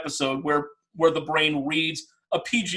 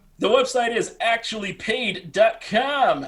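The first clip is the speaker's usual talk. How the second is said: weird, high, slow put-on salesman voice; 6 semitones higher than usual. Giving the website address when asked: put-on weird sales pitch voice. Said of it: "I put on a weird sales pitch voice for that".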